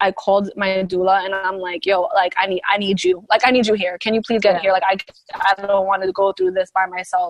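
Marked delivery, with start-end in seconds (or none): 1.9-7.3 put-on crying, lower and faster. Recounting a call to the doula after getting home, retelling own tearful plea. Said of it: "I was crying".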